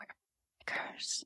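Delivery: sly, playful, very quiet, mischievous whisper. Retelling what a man behind the speaker whispered: imitating a whisper. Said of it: "and he whispered".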